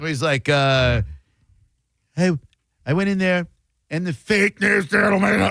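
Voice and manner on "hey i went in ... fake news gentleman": throaty put-on voice, pitched higher. Talking about a favourite voice of his, the speaker does a throaty Trump impression. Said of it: "He'll go into like the throaty Trump".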